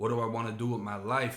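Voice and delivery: plain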